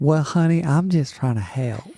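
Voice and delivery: put-on Southern country accent. Retelling a plan to talk all night as made-up characters with a sister, Betty Sue country accent. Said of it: "Like tonight we're just going to be country".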